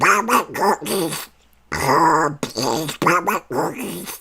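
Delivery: very high-pitched, slow, quacking voice. Showing off a cartoon voice to the audience, in a Donald Duck voice. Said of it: "with the Donald Duck voice".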